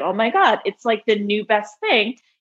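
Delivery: ordinary delivery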